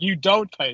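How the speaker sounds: ordinary delivery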